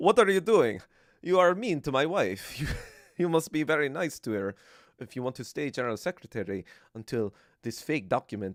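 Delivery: bad put-on Russian accent. Act out Lenin confronting Stalin over his wife, as Lenin in a worsening Russian accent. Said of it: "It's getting worse".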